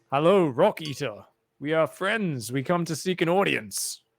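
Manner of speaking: booming, amplified loud voice filling the room. A player's character magically amplifies his voice to seek an audience: booming, amplified voice. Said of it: "just to kind of boom around the room".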